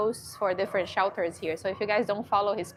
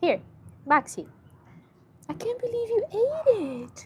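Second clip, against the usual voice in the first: very high, swooping, tearful crying voice; 13 semitones higher than usual. Speaker talking to the dog maxie as he eats a treat: crying. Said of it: "Me crying because he ate a treat".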